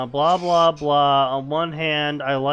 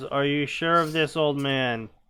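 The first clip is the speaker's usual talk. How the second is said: ordinary talk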